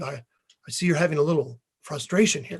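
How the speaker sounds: soft, hushed, confidential stage whisper. Retelling how the teacher slid up while carving: imitating someone half-whispering. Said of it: "he kinda whispers".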